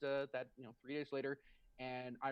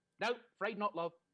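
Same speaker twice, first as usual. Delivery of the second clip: put-on broad British woman's voice, higher pitched; 6 semitones higher, 5 dB louder than usual. Retelling Irene's answer about a Christmas present, imitating Irene, broad British. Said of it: "British broad".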